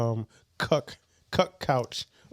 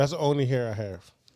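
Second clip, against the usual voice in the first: normal talking voice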